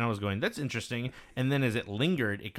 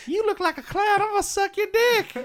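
put-on woman's voice, very high and loud; 7 dB louder than usual. Joking with friends, the speaker shows what ladies sound like, imitating a lady's voice. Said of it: "that's what ladies that's sound like".

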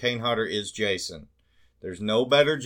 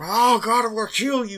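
put-on hulking killer voice, louder; 12 semitones higher, 4 dB louder than usual. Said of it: "hulking, deep breath".

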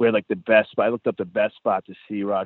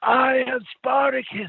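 mock shouted yell, very high-pitched. Retelling a father at a show who stood up: imitating someone yelling. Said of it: "the father just stood up and started yelling".

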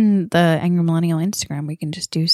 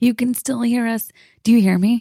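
rough, horrible-sounding throat-clearing voice, higher pitch; 6 semitones higher than usual. Addressing listeners while the other speaker complains about the voice: sounding horrible, needing throat clearing. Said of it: "you sound horrible".

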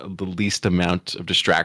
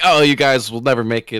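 normal talking voice

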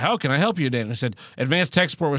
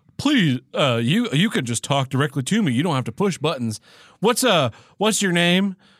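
polite automated phone-tree robot voice; 3 semitones higher than usual. Retelling a phone support call, imitating an automated phone robot. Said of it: "the robot's like".

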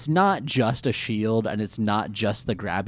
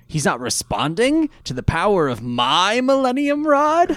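deliberately placed, very specific pointed emphasis; 10 semitones higher, 4 dB louder than usual. Correcting a quote from the episode: Merrick's very specific emphasis. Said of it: "he does it with a very specific emphasis".

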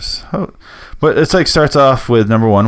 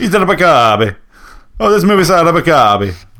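fake Italian accent, higher pitch; 6 semitones higher than usual. Answering a request to say the line in an Italian accent: put-on Italian accent. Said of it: "Say it in Italian accent".

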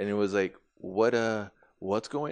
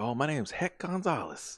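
put-on cowboy-style Texas accent, high-pitched; 7 semitones higher than usual. Retelling how Hector shows up and introduces himself, in a Texas cowboy accent. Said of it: "giving his best like Texas cowboy impersonation".

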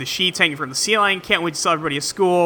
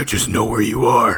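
very scary man voice, much lower; 6 semitones lower than usual. Retelling a movie phone call, the caller in a very scary man voice. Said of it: "the very scary man voice".

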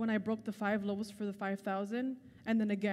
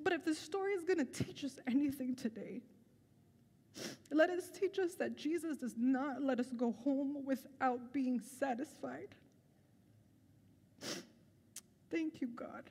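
tearful, speaking through tears; 4 semitones higher, 4 dB quieter than usual. Speaker closes a message about the church with thanks to God, tearful. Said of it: "I'm so sorry for the tears".

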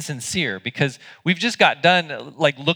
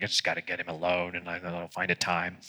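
mock muttering under breath, lower and quieter; 8 semitones lower, 10 dB quieter than usual. Acting out a friend's report of an overheard plot: imitating someone muttering under breath. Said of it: "he was muttering under his breath".

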